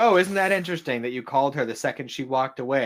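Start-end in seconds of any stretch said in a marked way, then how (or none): none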